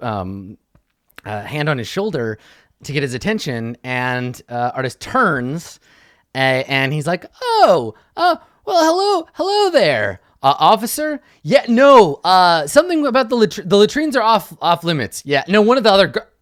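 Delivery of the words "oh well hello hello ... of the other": put-on, really loud, high talking. Retelling how a man answered an officer, retelling really loud talking. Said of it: "And he's talking really loud".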